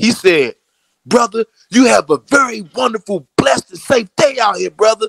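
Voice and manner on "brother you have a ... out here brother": very high, intense, fervent, passionate, all-in delivery. Retelling what a stranger on the street said: imitating someone extremely passionate and intense. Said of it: "extremely passionate and extremely intense about saying this".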